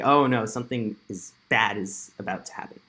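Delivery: ordinary delivery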